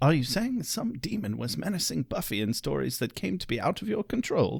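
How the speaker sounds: soft, raspy, low-key voice. Recapping a scene, speaking as Giles: raspy Giles impersonation. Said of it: "more raspy Giles impersonation".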